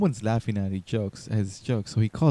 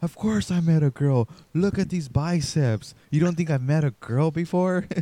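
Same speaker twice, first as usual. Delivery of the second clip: acted, furious, indignant, pitched-up super mad tone; 6 semitones higher than usual. Retelling a comedian's comeback to a heckler, imitating someone super mad. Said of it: "he gets super mad".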